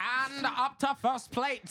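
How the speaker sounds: very loud, high-pitched transatlantic announcer voice. Asking another to announce a baseball game, trying it in a transatlantic announcer accent. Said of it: "I want you to announce a baseball game in that".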